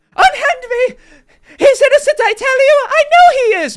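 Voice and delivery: shrill, very high, very loud shouting. Voicing a woman struggling against guards holding her back: yelling woman held back. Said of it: "you hear some yelling as guards try to hold back".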